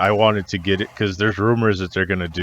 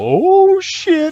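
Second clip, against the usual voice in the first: excited scream, much higher and louder; 8 dB louder than usual. Recounting jumping out of a chair at an announcement, retelling a scream. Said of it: "I screamed out an audible".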